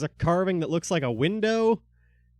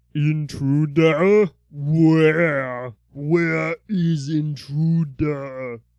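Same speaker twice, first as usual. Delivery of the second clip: loud, big rumbling voice, "where" drawn out; 6 dB louder than usual. Telling the players what they hear, voicing an unseen speaker, big rumbly voice. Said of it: "you hear a big rumbly voice that says".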